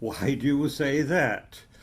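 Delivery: ordinary talk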